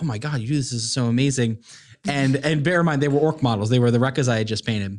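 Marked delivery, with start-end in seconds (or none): none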